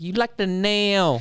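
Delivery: slow, drawn-out Spanish accent.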